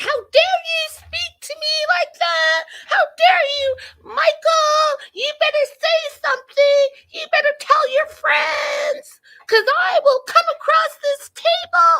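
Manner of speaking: mock furious rant, very high and loud. Retelling the fight at the table, imitating Angela getting riled up. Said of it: "she's getting herself all riled up".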